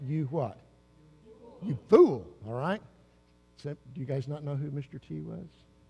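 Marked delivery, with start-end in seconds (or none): 1.6-2.2 put-on tough attitude, higher and louder. Leading the crowd in reading two words: Mister T attitude. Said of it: "You do it with a little Mister T attitude".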